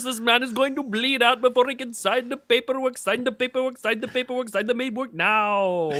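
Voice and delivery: put-on very high, heavy, dialed-up Indian accent. Asked by the other host to dial up the accent, the speaker continues: dialed-up Indian accent. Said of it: "dial up the Indian accent".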